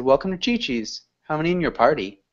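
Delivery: quick, run-together phrasing with key words stressed. Explaining english intonation, demonstrating a restaurant greeting, fast connected speech. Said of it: "So if I said".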